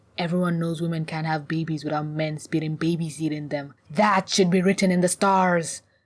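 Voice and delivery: ordinary talk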